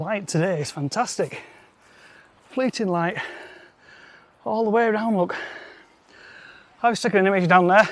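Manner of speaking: breathless, out of breath, winded. Having just run up to the top path, out of breath. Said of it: "I am out of breath".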